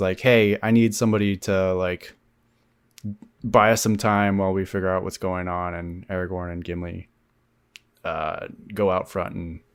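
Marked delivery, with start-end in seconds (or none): none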